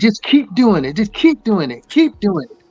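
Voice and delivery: sincere put-on voice. Retelling Mike Tyson's advice from a talk show: Mike Tyson voice. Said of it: "in Mike Tyson's voice".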